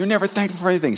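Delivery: play-acted very high, furious angry yell. Recalling complaining about dinner as a child, imitating the father's angry yell. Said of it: "My dad was angry and he yelled at me".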